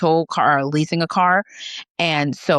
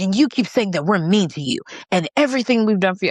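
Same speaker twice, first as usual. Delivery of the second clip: heated, irate, accusing, blaming rant; 3 semitones higher than usual. Retelling an argument where grandma starts yelling: imitating grandma yelling.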